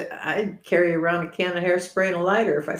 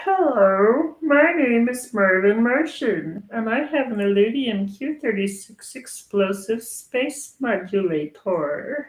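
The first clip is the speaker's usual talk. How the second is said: slow, stretched-out hello; 4 semitones higher, 3 dB louder than usual. Showing off an impression after being asked, Marvin the Martian voice. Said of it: "I can do um, Marvin Martian".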